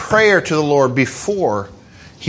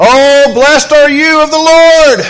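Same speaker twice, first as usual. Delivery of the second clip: loud, high, somewhat overdone exclamation; 7 semitones higher, 5 dB louder than usual. Retelling a Bible story, the speaker voices Saul greeting Samuel: loud acted exclamation. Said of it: "I got a little loud".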